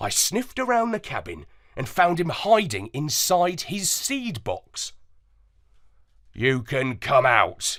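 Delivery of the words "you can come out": growled, rumbling words. The narrator finds the parrot hiding in his seed box and calls him out, growling. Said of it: "I growled".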